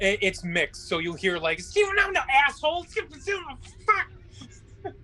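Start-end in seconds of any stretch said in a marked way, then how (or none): 1.8-4.9 goblin scream, much higher and slower. A player voices a goblin screaming in mixed Common and Goblin, a goblin scream. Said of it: "Are you screaming that in uh".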